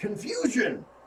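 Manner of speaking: high yell, shouted out in character. Answering the giant in character: yelling in character. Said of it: "I yell out".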